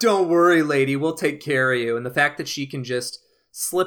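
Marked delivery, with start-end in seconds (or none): 0.0-2.0 loud, mocking, patronizing and protective tone. Describing how men in a movie treat a survivor: imitating a mocking reassurance.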